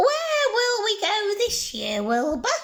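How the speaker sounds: very high pitch, swinging widely up and down. Reading a story aloud, voicing Winnie asking her cat Wilbur: Winnie the Witch voice. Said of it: "listen to my super witch voice".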